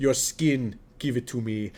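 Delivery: very low, machine-like robot voice. Picturing a tech boss leaning over a desk: Terminator Mark Zuckerberg voice. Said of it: "Terminator Mark Zuckerberg leaning over the top of his desk".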